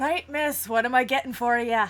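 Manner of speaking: booming, very loud big barkeep voice. Voicing a large tavern servant greeting a customer: large servant's voice. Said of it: "servant who sees you and goes".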